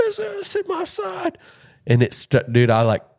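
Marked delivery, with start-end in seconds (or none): 0.0-1.4 scream, higher. Retelling a son's scare over a tick, imitating a son screaming. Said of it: "starts screaming".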